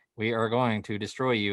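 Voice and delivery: put-on old eighties robot voice. Describing a movie's killer appliances, the speaker quotes them: old eighties robot voice. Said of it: "the old uh, eighties robot voice".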